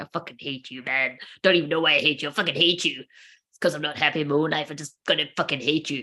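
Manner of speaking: mock seething, sour, bitter, hateful rant. Acting out a jealous person in a dressing gown: imitating a bitter hateful person. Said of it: "someone in a dressing gown, like".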